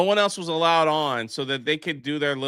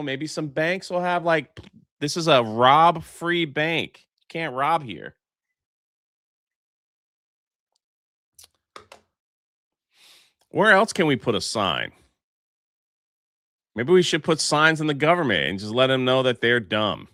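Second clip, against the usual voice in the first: sarcastic, mocking, tongue-in-cheek tone. Musing on where else signs could be put up, sarcastic. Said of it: "I'm being sarcastic here".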